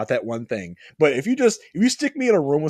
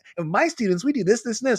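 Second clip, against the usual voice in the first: high, whiny, bratty salesman voice; 8 semitones higher than usual. Retelling Daniel playing car salesman for Miyagi-Do, in a whiny bratty Daniel voice. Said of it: "kind of like a like a bratty voice".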